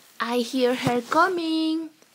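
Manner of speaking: exclaimed, stretched out slowly. Sarah, waiting with the others, hears her coming up the steps; exclaimed with a big smile. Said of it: "Sarah exclaimed with a big smile".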